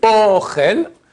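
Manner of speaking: Ochel, first syllable stressed, high and loud.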